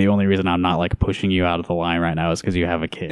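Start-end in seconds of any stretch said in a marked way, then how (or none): none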